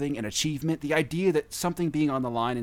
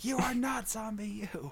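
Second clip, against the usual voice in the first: imitated scream, higher pitch; 8 semitones higher, 6 dB quieter than usual. Retelling screaming at a game while others were in the house: retelling own scream. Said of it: "and I'm screaming".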